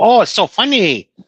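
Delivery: funny put-on Chinese accent. Explaining what the fired comedian did, acting out his bit: mock chinese accent. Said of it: "It was the Chinese accent because he go".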